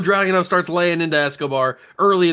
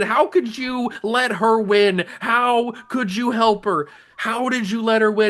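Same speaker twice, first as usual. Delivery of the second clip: mock scream, higher and slower; 5 semitones higher than usual. Describing what the backstage camera caught, retelling a scream at him. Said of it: "she's screaming".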